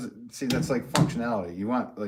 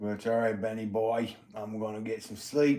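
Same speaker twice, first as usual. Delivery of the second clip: clumsy, bad, fake Cockney accent. Signing off to benny and the audience, bad cockney accent. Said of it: "I do that Cockney accent for you".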